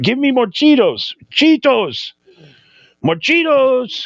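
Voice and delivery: high, insistent, demanding plea. Retelling how Saddam Hussein loved Cheetos: imitating Saddam Hussein demanding Cheetos. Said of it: "He's like".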